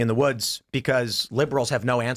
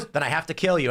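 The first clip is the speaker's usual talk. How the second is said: ordinary delivery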